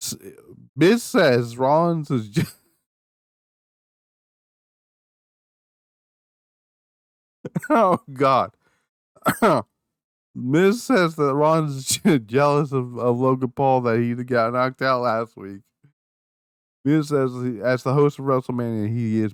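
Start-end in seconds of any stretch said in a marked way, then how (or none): 0.8-15.6 laughing while talking, giggling through words. Reading out a wrestling recap, trying not to laugh: laughing while talking. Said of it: "try to read that again without, without laughing".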